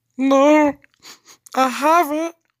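very high-pitched voice cracking and breaking. Narrator voices Emmanuel answering Sasha, in a broken voice. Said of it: "in a broken voice".

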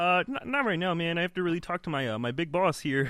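high-pitched cartoon frog puppet voice. Greeting Elmo after being introduced as a friend: Kermit the Frog voice. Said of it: "Kermit the Frog".

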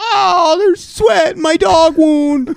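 whiny, crying, very high and slow whimper. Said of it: "I'm like".

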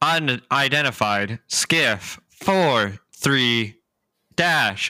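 slow, measured, drawn-out announcer tone. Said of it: "Can you speak up a little bit faster".

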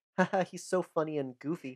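ordinary delivery

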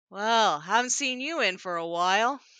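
slow turtle-like creature voice. Game master voices Tayton, the tortle bar owner, greeting Poppy, in Tayton's slow voice. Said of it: "kind of his slow voice".

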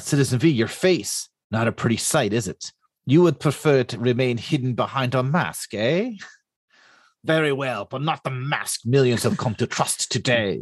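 comic-book villain voice. Confronting an unmasked Citizen V about his scarred face, in a villain voice. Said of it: "I love your villain voice".

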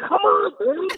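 high-pitched, exasperated, pleading voice.

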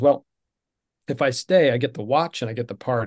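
plain

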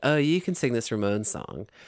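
ordinary delivery

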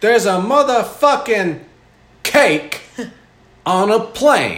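shrill, booming, very loud, high, swooping drawn-out yell. Joking about flying a cake on a plane: Samuel L. Jackson impression. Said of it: "impression of Samuel L".

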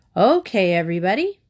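ordinary delivery, nothing marked

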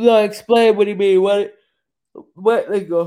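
talking through a yawn. Asking another speaker to explain what they mean, yawning while talking. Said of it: "I'm sorry, I'm yawning".

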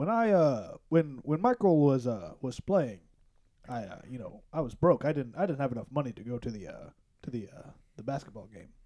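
drops low, keeps hesitating. Retelling something said on The Last Dance: Obama impression. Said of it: "what a great Obama impression".

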